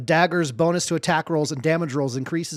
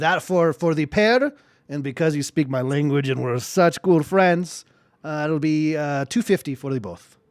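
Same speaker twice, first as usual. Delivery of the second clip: put-on Scottish accent that slides and slips. In a tabletop game, quoting the price for the pair, Scottish accent slipping into Strong Bad. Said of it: "your Scottish accent has degraded into strong bad".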